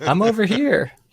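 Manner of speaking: voice pitched way up, calling out. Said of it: "And then he's like".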